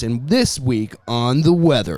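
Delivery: perfect, golden radio broadcast announcer voice. Telling how a homeless man became a newscaster, imitating his golden radio voice. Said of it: "he starts talking like this".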